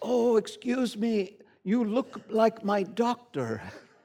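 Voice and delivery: put-on slow, unhurried, high Indian accent. Retelling what a man said to them while shopping: Indian accent. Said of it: "in his Indian accent".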